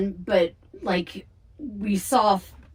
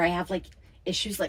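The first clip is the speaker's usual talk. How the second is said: plain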